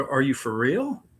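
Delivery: ordinary talk, nothing marked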